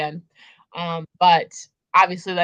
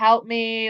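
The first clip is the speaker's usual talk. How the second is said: put-on screaming and crying; 5 semitones higher than usual. Describing a book scene, the speaker acts out the heroine's plea, imitating Feyre screaming and crying. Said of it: "Feyre is like screaming and crying".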